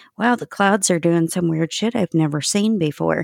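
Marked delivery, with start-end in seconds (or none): none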